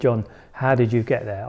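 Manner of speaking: ordinary talk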